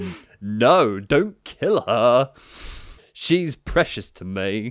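very slow, deliberately bad put-on voice. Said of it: "I'm gonna do my [name] impression now".

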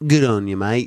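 low, put-on Australian accent. Asked by the group to say a phrase in an Australian accent: Australian accent. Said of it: "say it in an Australian accent".

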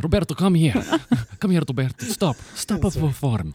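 very high-pitched, slight put-on Portuguese accent. Imitating the listener's parents calling Roberto over, with a bit of a Portuguese accent. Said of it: "a bit of like a Portuguese accent".

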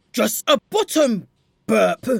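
put-on voice pushed down as deep as possible. Narrator reads a girl replying to Stade, in a deliberately deepened voice. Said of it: "trying to make her voice sound even deeper than before".

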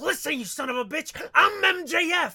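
very loud, high-pitched wrestling ring promo delivery. Showing how a wrestler's promo cadence sounds: imitating MJF's promo cadence. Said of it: "The way he goes like".

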